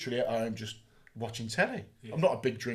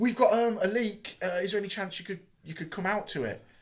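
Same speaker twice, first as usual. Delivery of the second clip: put-on panicked voice, higher; 8 semitones higher than usual. Retelling a caller's phone request about a leak: imitating a panicked caller. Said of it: "you can hear that panic in the voice".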